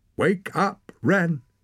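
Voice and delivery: very high-pitched, loud shout. A boy speaks right into a girl's ear as she lies in the snow, shouting. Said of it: "Torak shouted in her ear".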